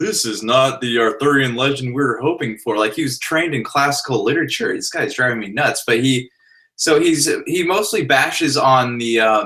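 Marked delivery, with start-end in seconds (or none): 0.0-2.8 mocking, super snobby critic tone. Retelling what a film critic wrote in his article: imitating a snobby critic. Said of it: "talking, like, super snobby".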